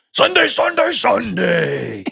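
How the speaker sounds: very high, gritty, rough monster truck announcer hype. Act out Chris doing a voice-over for the first metal draft video, in a monster truck voice. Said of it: "I'm just going to do monster truck voice over everything".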